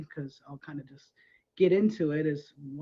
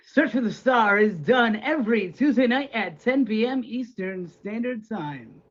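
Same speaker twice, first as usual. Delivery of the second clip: loud, booming, big show-announcer voice; 6 semitones higher, 6 dB louder than usual. Prompted to do a show plug, the speaker delivers it: announcer man voice. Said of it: "Hoops' iconic announcer man voice".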